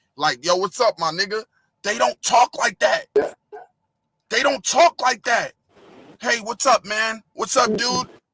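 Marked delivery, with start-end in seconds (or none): 6.2-8.1 put-on casual dude voice, New Jersey accent. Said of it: "This is how they talk out here".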